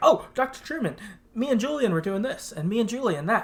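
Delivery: high, eager, excited, rapid babbling chatter. Retelling what the young boy said: imitating Ezra talking a mile a minute. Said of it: "a mile a minute".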